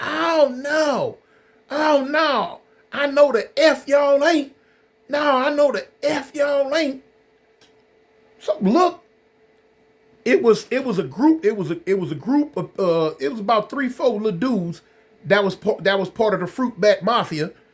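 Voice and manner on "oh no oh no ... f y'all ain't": very slow, high-pitched, strung-out, drawn-out yelling. Retelling people coming out of the block: retelling a high-pitched yell. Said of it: "yelling now in a high pitched voice".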